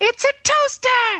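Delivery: very high, slow, drawn-out scream.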